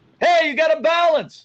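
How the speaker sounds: very high scream carrying far. Showing a performer how instructions must sound across a big field: screaming across a field. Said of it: "what's going to sound like is I'm screaming at you".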